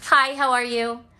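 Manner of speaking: put-on nice Chicago girl voice. Showing the chicago girl she had to figure out: nice chicago girl voice. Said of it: "what it means to be a Chicago girl".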